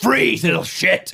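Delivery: very high, squeaky, pushed-up menacing voice. In the scene, the character shouts horrible stuff at a goblin: shouting at a goblin. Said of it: "Shouting horrible stuff to this goblin".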